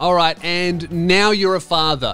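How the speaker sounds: plain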